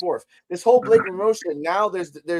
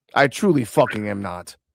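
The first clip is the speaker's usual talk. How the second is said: grumpy, sour, bad-tempered insistence; 7 semitones lower than usual. Apologizing to the others for being in a bad mood: audibly bad mood. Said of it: "as you can hear, ladies and gentlemen, I'm not in a good mood".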